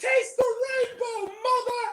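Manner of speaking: very high, acted-out triumphant, victorious battle cry. Retelling a movie's final line, imitating a triumphant yell. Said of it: "looks off triumphantly on her steed and yells out".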